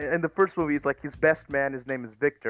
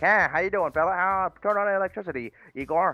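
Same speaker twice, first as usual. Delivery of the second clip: rapid, pitched-up 1920s businessman patter; 5 semitones higher than usual. Pitching a Frankenstein movie where everyone talks 1920s-style: fast-talking 1920s businessman. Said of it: "fast talking businessman like".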